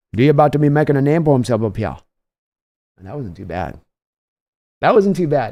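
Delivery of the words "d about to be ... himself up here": laid-on, put-on Cajun accent. Thanking a donor, the speaker quotes a favorite X-Men character in Gambit's Cajun accent. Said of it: "I can't do a Cajun accent".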